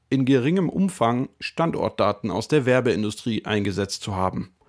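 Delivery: ordinary delivery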